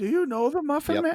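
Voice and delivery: very high, pitched-way-up character voice. Quoting a Shrek line: Gingerbread Man voice. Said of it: "it was the gingerbread man talking about the Muffin Man".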